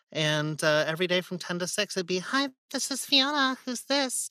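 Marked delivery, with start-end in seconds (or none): 2.2-4.3 very high put-on woman's phone voice. Retelling his phone actor job, greeting callers in a lady voice. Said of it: "I have a lady voice".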